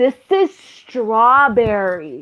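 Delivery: patronizing, condescending, talking-down tone. Retelling a reply to a waiter, pointing at a milkshake: imitating own condescending tone. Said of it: "I said it so condescending".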